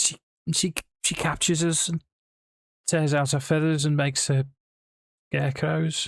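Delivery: put-on mild Scouse accent. A freed captive answers the one who rescued him, in a mild Scouse accent. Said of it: "he will have a mildly Scouse accent".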